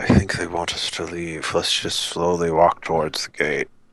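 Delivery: hushed, half-whispered aside. Speaking in character to the rest of the party, half-whispering to the group. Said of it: "I'm just gonna whisper to everybody else".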